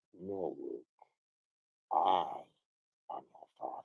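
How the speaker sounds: very low, hushed, soft, slow villain voice. Showing how James portrayed the part, give your best interpretation in a Darth Vader impression. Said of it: "This is my best interpretation".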